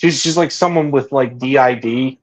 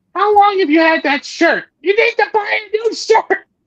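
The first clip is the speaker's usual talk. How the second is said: very high-pitched nagging mother voice. Describing a doll that talks to a man in his mom's voice, imitating his mom's voice. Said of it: "in his mom's voice".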